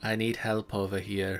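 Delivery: barely-there, very quiet, soft hushed half-whisper. Voicing a character who asks another for help: very quiet half-whisper. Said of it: "very quietly whispers to you".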